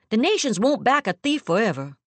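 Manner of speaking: hard, unyielding tone. A man speaks to the narrator, his tone hardening. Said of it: "His tone hardens".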